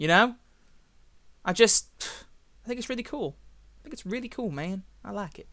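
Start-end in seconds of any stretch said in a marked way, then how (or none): 3.8-5.5 southern accent drawl, much quieter. Speaker praising the little friend rifle, slipping into a southern drawl. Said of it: "I don't know why I'm going for a southern drawl there".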